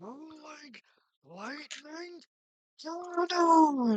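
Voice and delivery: high, loud, drawn-out yell. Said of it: "You hear him yell".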